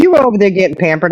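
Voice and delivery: sarcastic, dry delivery. Teasing the other speaker in conversation: sarcastic. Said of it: "on the sarcasm side here".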